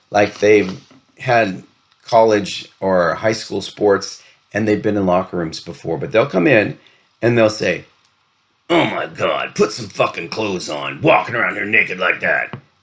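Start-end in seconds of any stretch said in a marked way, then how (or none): 8.6-12.5 mock muttering under breath. Retelling what younger people say in the locker room: imitating muttering under breath. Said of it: "they'll say it under their breath".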